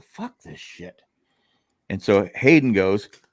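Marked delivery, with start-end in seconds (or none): 0.0-1.0 barely audible, whispered mutter under the breath. Retelling waking up to people fighting at breakfast, muttered under breath. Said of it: "I thought I under my breath".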